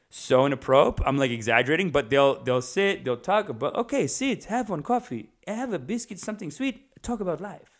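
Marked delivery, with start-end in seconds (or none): 3.7-7.6 put-on Italian accent. Imitating old Italian men talking about life: Italian voice with Middle Eastern tinge. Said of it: "I kinda make my Italian Middle Eastern".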